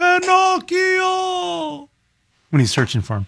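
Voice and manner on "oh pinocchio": put-on old man voice, much higher. Asked for a Geppetto, calling out while searching for Pinocchio: Geppetto impression. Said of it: "You want to hear my Geppetto?".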